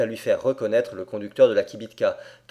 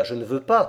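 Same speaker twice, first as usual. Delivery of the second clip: plain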